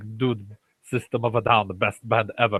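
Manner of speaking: put-on Armenian-accented speech. Imitating how an Armenian neighbor might talk: put-on Armenian accent. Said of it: "Does he talk like this".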